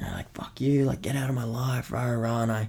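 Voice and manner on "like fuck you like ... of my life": put-on angry yelling, higher. Retelling screaming at despised people during a breath session vision: retelling a yell. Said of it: "yelling at them like".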